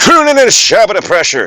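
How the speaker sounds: very high politician voice, pitch swooping around. Podcaster scolding a co-host for whispering, blurting a wrong Biden impression. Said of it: "that was the wrong impression of Biden".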